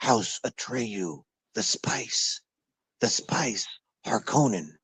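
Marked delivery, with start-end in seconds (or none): 0.0-3.7 slow, hushed, barely-there whisper. Mocking how everyone in a dark movie talks, whispered. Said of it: "everyone is talking like this".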